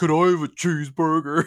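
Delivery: loud, high mocking copycat echo. Retelling how middle schoolers would answer someone: imitating a mocking voice. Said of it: "Like you're mocking someone?".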